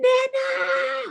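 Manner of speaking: mock shrill, creaky, high, rough, drawn-out wailing scream. Retelling how a best friend screamed when Nana fell out of the boat; imitating a scream. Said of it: "my best friend screams".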